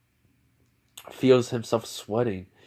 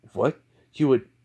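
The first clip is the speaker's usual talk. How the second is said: ordinary delivery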